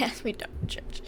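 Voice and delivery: soft whisper, spoken slowly.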